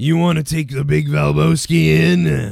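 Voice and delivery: low, growling voice. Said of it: "with that deep, you know, growly voice".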